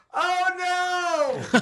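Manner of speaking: very high, drawn-out shriek with "oh" stretched. Recalling your wife's reaction in the theater, imitating wife screaming out. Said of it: "my wife screamed out".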